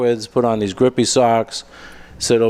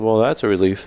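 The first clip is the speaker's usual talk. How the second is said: usual speaking voice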